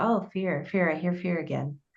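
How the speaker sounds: acted muttering under breath. Speaker imitates her coach trainer picking up a word, imitating mumbling to herself. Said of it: "she would just sort of mumble it off to herself".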